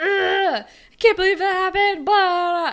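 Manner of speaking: very loud, shrill, furious angry outburst. Acting out a made-up scene where Casey lashes out: imitating Casey lashing out angrily. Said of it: "lashes out and is like".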